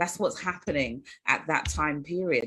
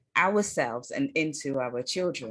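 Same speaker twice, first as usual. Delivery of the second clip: ordinary delivery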